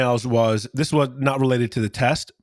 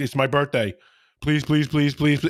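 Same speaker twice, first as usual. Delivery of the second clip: mock imploring, pleading tone. Retelling a student's plea to redo a playing test: imitating someone begging. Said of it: "begging me".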